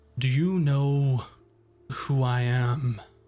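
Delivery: imposing, big voice of a giant tree creature. Game master voicing a creature addressing a player, in a booming voice. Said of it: "With their booming voice".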